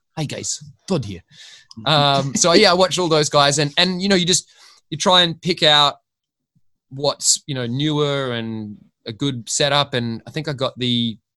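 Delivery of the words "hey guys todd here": put-on Scottish accent. Imitating a YouTuber's video intro: Scottish accent imitating Todd. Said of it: "Scottish accent, one of my favourite accents".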